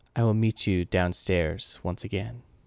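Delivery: tiny, slight, soft voice. The narrator voices a figure calling from the far end of the room: small voice. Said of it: "the small voice".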